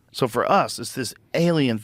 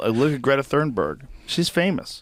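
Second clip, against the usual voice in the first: normal talking voice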